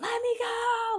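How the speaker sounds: acted, very high, crazed and frantic hysterical voice. Retelling a fight where the woman he held down started spazzing, imitating her frantic crazed pleading. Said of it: "like a crazy person".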